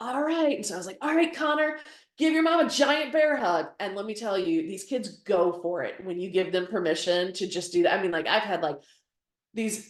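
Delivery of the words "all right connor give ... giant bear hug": high, raised shout. Retelling what they shout at a senior: retelling a shout. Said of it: "I'll shout at the senior".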